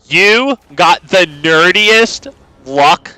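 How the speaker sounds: cracking up, high-pitched, very slow laughing read. Reading a message aloud, laughing while reading. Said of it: "I couldn't even read that with a straight face".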